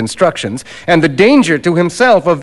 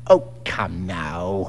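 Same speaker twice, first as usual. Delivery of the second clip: scornful sneer, very low and very quiet; 11 semitones lower, 10 dB quieter than usual. Narrator reads McFarlane's reply to Fettes, sneering. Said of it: "sneered the other".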